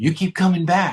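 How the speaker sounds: put-on grave, dead-serious, earnest delivery. Retelling what a man told him after looking at him, imitating a very serious tone. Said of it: "he looked at me very seriously and he said".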